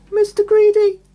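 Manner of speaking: frightened, shrill, high squeak. Narrator reading a frightened Mister Greedy giving his name to a giant, squeaking. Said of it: "he squeaked".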